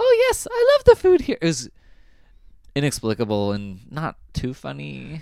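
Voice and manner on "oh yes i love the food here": very high, loud put-on ventriloquist-dummy voice. Describing a performer's act and retelling his line: super high put-on voice. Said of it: "ventriloquized this super high voice".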